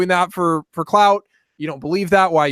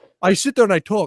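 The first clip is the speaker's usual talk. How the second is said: imitated Scottish-sounding accent. Urged to do the accent of a man from a video, Jordan Peterson impression, Scottish-sounding. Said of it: "Was Jordan Peterson Scottish now".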